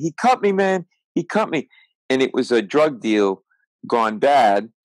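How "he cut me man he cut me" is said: shrill scream, pitched very high. Retelling a bar fight where a cut man screams: imitating a man screaming. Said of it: "he starts screaming".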